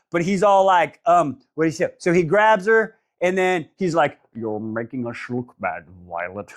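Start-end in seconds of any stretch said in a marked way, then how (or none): 4.4-6.6 put-on dragon voice, lower and quieter. Retelling a dragon's lines from a book: Sean Connery voice. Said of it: "it's a Sean Connery voice".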